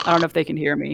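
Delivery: plain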